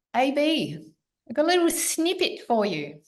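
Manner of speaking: high, swooping, put-on Australian accent. Recounting what an Australian friend would say to the speaker, imitating an Australian accent. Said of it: "so I do my best Australian".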